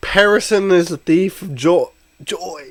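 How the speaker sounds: voice cracking, breaking up, high and loud. A speaker addressing listeners, voice cracking. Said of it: "Voice crack number four".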